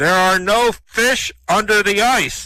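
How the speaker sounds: slow, loud, booming voice. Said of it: "he hears this booming voice".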